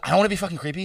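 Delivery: anxious, edgy, nervous voice. Retelling what a fan said on coming up to say hi: imitating a nervous fan. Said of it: "And she's so nervous".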